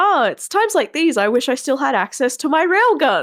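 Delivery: high, bubbly, bouncy delivery. Speaker mimics how she says slightly psychotic things, imitating her bouncy tone. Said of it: "says slightly psychotic things in that bouncy tone like".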